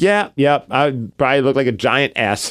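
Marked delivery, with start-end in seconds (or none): none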